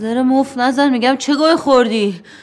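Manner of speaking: furious shouting. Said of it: "آروم باش [name]".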